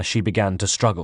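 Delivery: plain reading voice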